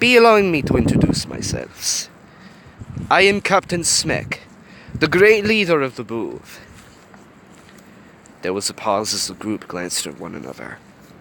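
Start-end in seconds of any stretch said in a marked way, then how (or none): 0.0-6.6 high-pitched, put-on Russian accent. Reading the leader introducing himself to a group, in Captain Smek's Russian accent. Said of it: "Captain Smek with a Russian accent".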